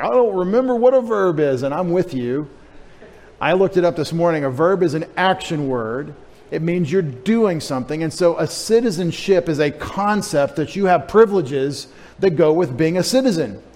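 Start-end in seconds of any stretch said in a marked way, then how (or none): 0.0-1.6 high, loud, lost-sounding confused voice. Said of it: "And you're like".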